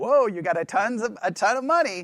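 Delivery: ironic, sarcastic, fake-impressed amazement. Showing how to answer a little kid with ten cents: sarcastic. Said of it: "I would use it in a sarcastic way".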